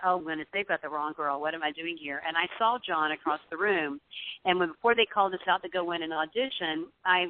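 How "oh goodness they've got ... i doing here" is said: normal talking voice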